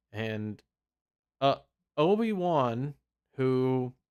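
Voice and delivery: ordinary talk, nothing marked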